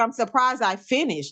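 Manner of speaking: usual speaking voice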